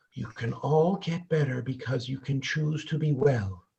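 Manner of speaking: gentle, very quiet, hushed soft voice. Recalling a group session, quoting the woman leading it: imitating a soft voice. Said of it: "said in her real soft voice".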